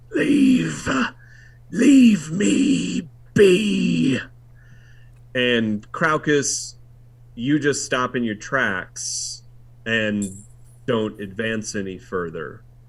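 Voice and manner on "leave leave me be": high, booming, very slow, drawn-out hiss. Narrator voicing the pit master as it turns back to the players, hissing. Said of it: "and he hisses".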